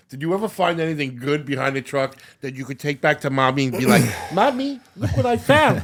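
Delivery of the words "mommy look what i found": put-on squeaky, very high small child voice. Teasing a co-host about finding things behind a truck, in a mock little-kid voice. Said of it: "I didn't talk like that when I was twenty-three".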